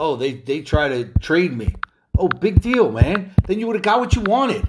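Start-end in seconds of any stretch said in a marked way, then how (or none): none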